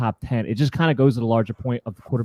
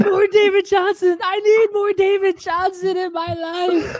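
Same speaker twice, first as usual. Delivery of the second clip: very high, slow, stretched-out voice; 3 dB louder than usual. Doing an impression of Chris after his pick: imitating Chris. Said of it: "that's my impression of Chris".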